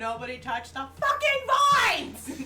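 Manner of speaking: high, loud yell with a laugh in it.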